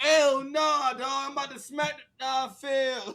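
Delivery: street-slang voice, pitched way up.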